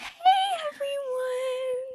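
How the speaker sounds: squeaky, very high-pitched voice. Retelling how the first intro sounded: imitating own very high-pitched voice. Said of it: "thirty-eight octaves high".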